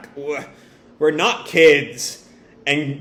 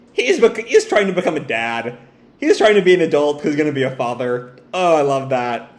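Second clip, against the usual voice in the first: ordinary talk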